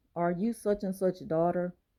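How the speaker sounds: normal talking voice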